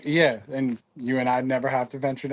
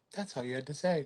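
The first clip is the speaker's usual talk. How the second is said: put-on polite customer service tone, quieter; 12 dB quieter than usual. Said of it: "his best customer service voice".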